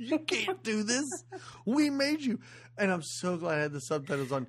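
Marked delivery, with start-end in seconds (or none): 0.0-2.4 very high, shrill freak-out screaming. Retelling how the waitress screams at the trucks: imitating someone screaming. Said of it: "And she starts screaming".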